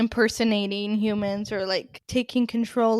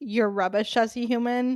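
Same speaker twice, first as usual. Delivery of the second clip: ordinary talk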